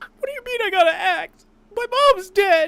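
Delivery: put-on shrill, very high, loud, whiny teenager voice. Imagining a fan dub with everyone else voiced normally: Aqua as a whiny teenager. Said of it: "Aqua has to sound like a whiny little teenager".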